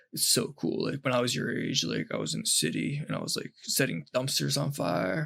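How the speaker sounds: raspy, throaty, scratchy, guttural voice. Quoting a man he met; scratchy guttural heroin voice. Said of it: "He had like the the heroin voice".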